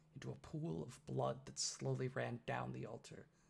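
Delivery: ordinary delivery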